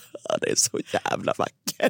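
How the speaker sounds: put-on breathy, tearful, sobbing whisper. Acting out the speaker's own earlier reaction: mock-sobbing. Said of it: "inte så här en liten tår utan bara".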